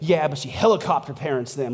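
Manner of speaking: put-on passive-aggressive voice. Acting out a reply undercutting praise of a mother: imitating a passive-aggressive jab. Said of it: "why are you being passive aggressive".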